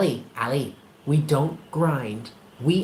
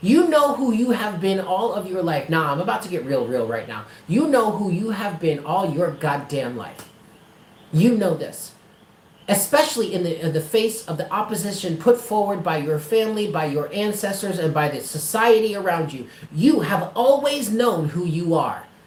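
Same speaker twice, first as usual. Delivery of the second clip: ordinary talk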